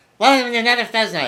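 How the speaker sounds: put-on rushed, sped-up, very high-pitched New England accent. Speaker mocks a man from videos he finds annoying; sped-up new england accent. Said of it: "It's all speeded up".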